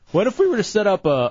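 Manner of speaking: voice cracking. Pitching an idea to the others, voice cracking. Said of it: "why does my voice keep cracking today?".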